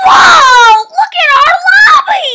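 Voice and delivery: very high, long-stretched shriek of delight. A player sees the new Halloween lobby in the game: screaming. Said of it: "I'm sorry for screaming".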